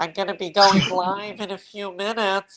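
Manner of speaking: sinus-heavy, pinched nasal tone. Trying an impression of the other speaker when asked: imitating Linda, nasal voice. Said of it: "I could try to do you".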